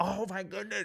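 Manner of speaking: very high-pitched panicked exclamation. Retelling losing all the money, imitating own past panic. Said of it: "I'm, like, panicking".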